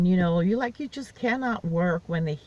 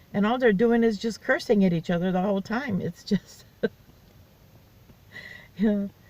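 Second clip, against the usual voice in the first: giggling, laughing while talking; 3 semitones higher than usual. Describing the people above and below arguing, giggling. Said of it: "I'm giggling like crazy".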